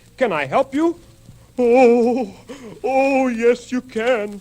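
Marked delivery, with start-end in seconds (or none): 1.6-4.4 moaned. Crocky, who has a terrible toothache, answers Sammy Squirrel, moaning. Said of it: "moaned Crocky".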